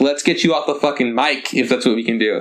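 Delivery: ordinary delivery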